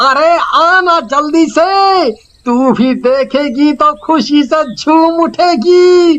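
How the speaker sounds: urgent, hurried calling out, rattled off. Calling someone to come out quickly and see something: shouting at top of lungs. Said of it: "क्यों इतना गला फाड़ रहे थे?".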